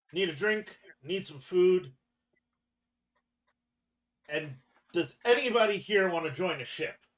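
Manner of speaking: loud, high yelling.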